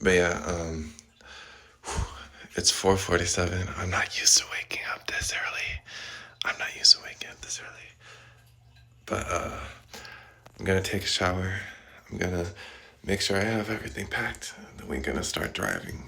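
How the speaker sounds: quiet hushed voice. Talking quietly after waking early so roommates stay asleep: talking quietly. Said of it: "I have to talk quietly".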